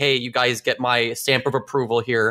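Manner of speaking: ordinary talk, nothing marked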